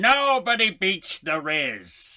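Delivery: put-on villain character voice. Saying goodbye to everybody, doing Verger: Verger impression. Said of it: "he's doing Verger".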